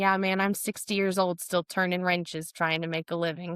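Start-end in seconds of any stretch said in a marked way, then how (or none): none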